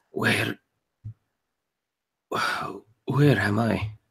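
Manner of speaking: very dry, soft, croaky voice. Player voicing a character in pain waking up, in a very dry, croaky voice. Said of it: "in a kind of a very dry, kind of croaky voice".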